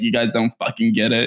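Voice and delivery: ordinary delivery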